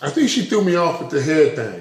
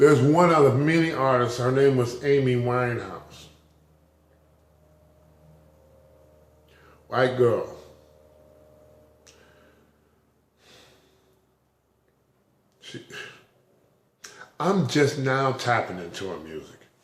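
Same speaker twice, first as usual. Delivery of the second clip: on the verge of tears, lower; 4 semitones lower than usual. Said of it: "I'm tearing up because I'm thinking about it".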